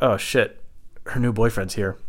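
ordinary talk, nothing marked

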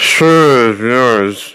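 mock slurred delivery. Retelling an actor's first line in a movie, imitating a slurred line. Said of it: "he slurs this line".

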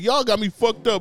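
high, loud, tough-guy trash talk. Mocking a wrestler's trash-talking voice from NXT: imitating Apollo Crews' tough NXT voice. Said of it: "You had a whole different voice".

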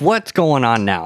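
acted rough, harsh voice. Retelling going over to a crying boy after hearing a scream, retelling a rough question. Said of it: "I said it like that, just rough".

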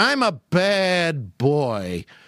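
"bad" dragged out long, very slowly. Talking about Abbott and Costello on the show, doing a Lou Costello impression. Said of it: "Lou Costello always played that".

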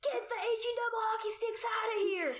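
put-on, high, furious, angry shouting. Retelling how a man yelled at the group while flashing a light: retelling a yell. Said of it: "And he yells".

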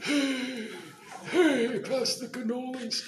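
very high-pitched, hushed, soft mob-boss voice. Asked to talk like the Godfather while wearing a Godfather shirt, answer in a Godfather voice. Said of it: "Can you talk like the Godfather?".

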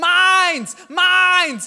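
put-on very high, very loud, shrill little-kid shout. The speaker retells two kids fighting in a store; imitating Hudson yelling. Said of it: "And so Hudson's yelling".

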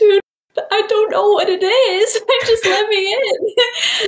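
very high pleading voice, close to crying. Retelling a moment in a Lollapalooza security line, imitating being about to cry. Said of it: "I was like about to cry".

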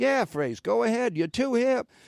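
put-on Boston accent. Speaker quotes a man's reply to his request, in his best boston accent. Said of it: "That's my best Boston accent".

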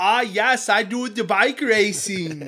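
terrible put-on Swedish accent, pitched high. Describing a show's star, speaker imitates John Cena's terrible Swedish accent. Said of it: "with a terrible Swedish accent".

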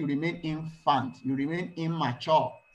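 ordinary delivery

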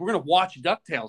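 put-on excited voice. Retelling how someone reacted to New Year's Eve plans: imitating someone excited. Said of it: "He's excited".

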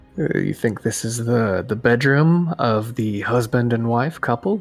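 speaking very quietly, hushed. In character, addressing only the group, speaking very quietly. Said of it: "Very quietly to the group".

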